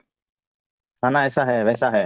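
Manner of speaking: slow, drawn-out, complaining tone.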